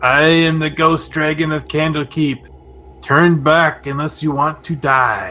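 squeaky, creaking, rusty-hinge squeal voice. Voicing a ghost dragon speaking to the players from the fog, squeaking like rusty hinges. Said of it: "squeaking like rusty hinges".

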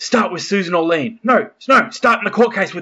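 hesitant, second-guessing delivery that shifts mid-line. Describing a film scene, quoting its writer character: Nicolas Cage impression. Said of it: "Nick Cage is trying to write his book and he's like".

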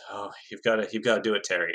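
put-on winded, breathless voice. Retelling what a racer said: imitating someone sounding winded. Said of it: "he sounds really winded here".

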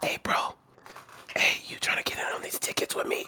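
whispered, hushed voice. Retelling a phone call he got, imitating the caller whispering. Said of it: "why are you whispering?".

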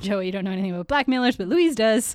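ordinary delivery

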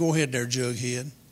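normal talking voice

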